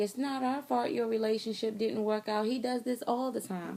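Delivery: mocking, sarcastic, dismissive brush-off tone. Retelling what the in-laws said when confronted: imitating a sarcastic remark. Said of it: "they just said in a sarcastic way".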